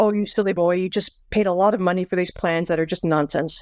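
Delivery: normal talking voice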